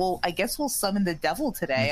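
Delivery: ordinary talk, nothing marked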